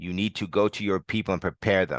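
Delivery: ordinary delivery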